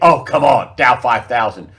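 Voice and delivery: loud, scoffing, incredulous disbelief. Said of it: "People will think".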